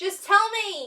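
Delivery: fearful, frightened, scared tone. Acting out a story scene, asked to say the line in a scared tone. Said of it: "just tell me like in a scared tone".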